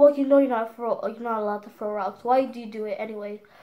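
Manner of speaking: ordinary talk, nothing marked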